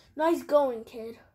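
plain

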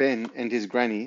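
plain

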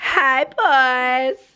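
bad fake Southern drawl. While vlogging, a speaker tries the accent again: put-on southern accent. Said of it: "this is [name]'s southern accent".

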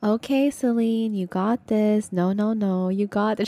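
mock steady, reassuring motherly coaxing, drawn-out "no". Playing a game with friends, the speaker quotes a teammate's encouragement, imitating Janet, calm. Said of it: "She's like a calm mother telling her child".

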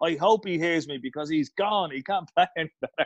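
put-on, mild, brash half-shouted yell. Telling a story, the speaker acts out Eamon shouting at the wall. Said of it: "And he shouts at the wall".

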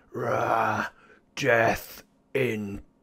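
horrific, twisted, weird, warped monster voice. Voicing a roaring manticore speaking to the players in a game, weird, warped manticore voice. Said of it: "It speaks with this weird, horrific, warped voice".

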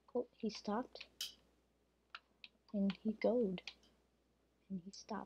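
quiet hushed speech. Streaming a game while hiding from something approaching, speaking quietly. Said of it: "Sorry if I'm being quiet".

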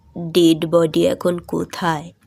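heavy, weighty tone. Abanish, just told of a sudden death from a stroke, speaks in a heavy voice. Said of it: "Abanish ভারী গলায় বললেন".

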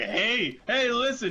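high-pitched, mocking voice. Complaining about the worst part of Ocarina of Time: Navi voice. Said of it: "the worst part of Ocarina of Time. It's like".

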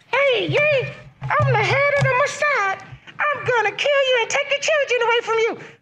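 very high-pitched cartoon-puppet voice. Voicing the head of the Mossad as a joke: Elmo voice. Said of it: "He went with the Elmo voice".

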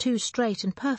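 ordinary delivery

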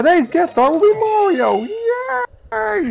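put-on excited frog puppet voice, yelling. Showing how Kermit yells at the start of the Muppet Show: Kermit voice yelling. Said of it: "yelling like Kermit at the start of the Muppet Show".

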